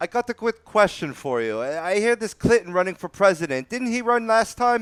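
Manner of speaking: horrible put-on English accent, pitched very high. Host asking a quick question after reading a sponsor ad, in a horrible english accent. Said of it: "the horrible English accent that I just offered".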